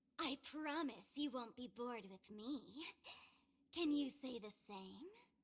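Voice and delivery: very raspy, hoarse voice. Game character taunting the player: very raspy voice. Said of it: "what happened to your voice there?".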